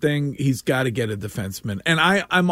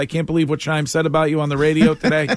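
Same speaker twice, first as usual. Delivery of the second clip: ordinary delivery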